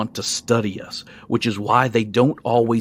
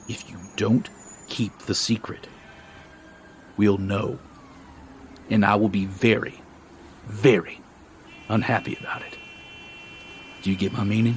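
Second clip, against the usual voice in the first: hushed, low near-whisper; 5 dB quieter than usual. A narrator reads a character speaking to new members, voice lowered even more. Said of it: "lowers his voice even more".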